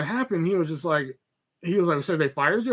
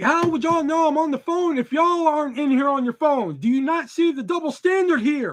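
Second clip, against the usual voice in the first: mock screaming, very high and shrill; 10 semitones higher, 4 dB louder than usual. Retelling arguing with a woman in a store about phones: retelling screaming. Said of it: "I'm screaming in the middle of the store".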